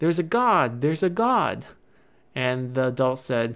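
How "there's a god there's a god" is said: put-on thrilled, eager, high-pitched calling out. Retelling a game scene where a child points at a sandstorm: retelling an excited scream. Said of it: "excitedly screaming".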